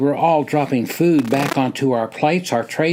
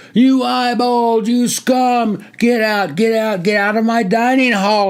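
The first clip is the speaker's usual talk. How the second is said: booming, screaming officer's bellow, pitched up; 8 semitones higher, 3 dB louder than usual. A lieutenant screams at a candidate in the dining hall, screaming. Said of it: "A red-faced lieutenant screamed into the guy's ear".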